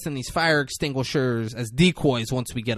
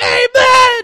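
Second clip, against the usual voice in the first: crowd's very loud, high, long drawn-out yelled "amen"; 12 dB louder than usual. Retelling a group answering a prayer: imitating people yelling amen. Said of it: "they start yelling".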